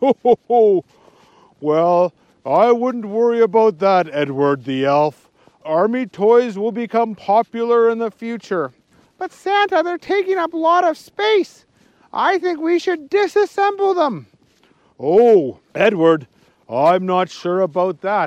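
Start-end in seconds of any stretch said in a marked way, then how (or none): 9.2-14.3 high-pitched squeaky pleading voice. Narrator reading a story, the head elf answering Santa, Edward the Elf voice. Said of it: "[name] the Elf, who is the head elf, / [name] the Elf, who is the head elf, wants to try to make more challenging toys every year. / He wasn't very happy. / (closing words) want. And you're going to w".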